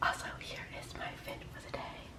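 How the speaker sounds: very soft whispering.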